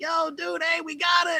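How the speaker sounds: high, shouted calling out.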